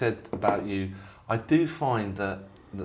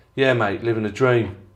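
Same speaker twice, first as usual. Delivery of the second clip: put-on sarcastic tone, louder and faster; 2 semitones higher, 10 dB louder than usual. Retelling what a bloke in a shop said back to you, imitating a sarcastic reply. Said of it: "he said it so sarcastically".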